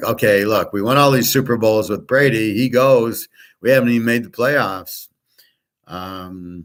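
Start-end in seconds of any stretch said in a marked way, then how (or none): none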